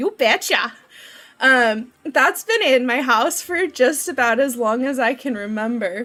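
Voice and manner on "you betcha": put-on Minnesota accent on you betcha. Reading a game line, imitating cousins: Minnesota accent. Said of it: "They're from Minnesota".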